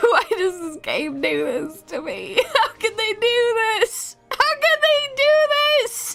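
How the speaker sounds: speaking while genuinely crying, tearful. Reacting to a sad moment in a game quest, crying while talking. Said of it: "now I'm just crying".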